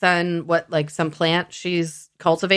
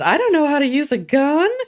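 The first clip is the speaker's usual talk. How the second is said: teasing, mocking tone, pitched up; 8 semitones higher than usual. Retelling a man joking with the woman he dragged off: retelling a mocking tone. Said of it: "jokes with her in a mocking tone".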